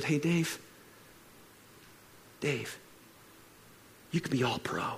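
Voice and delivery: quiet, soft, hushed whisper. Retelling lying prostrate on the floor and hearing God: imitating God whispering. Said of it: "God whispered to me and said".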